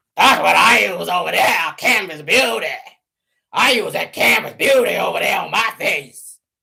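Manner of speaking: put-on, low, deep-throated, teasing, mocking voice. Mocking a woman who recommends Canvas Beauty: imitating a deep voice. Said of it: "Sound like Weezy Jefferson".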